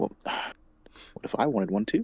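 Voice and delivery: quiet mumbling under the breath. In a roleplay, one character speaks aside to another: muttering under his breath. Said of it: "And Rod just under his breath".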